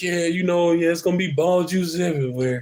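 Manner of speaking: mock wobbly joking voice. Retelling trying to crack a joke while upset: imitating own shaky voice. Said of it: "you could tell my voice is shaky".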